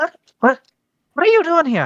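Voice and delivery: put-on Irish accent. Voicing a character who greets the players: Irish accent. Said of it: "Irish accent".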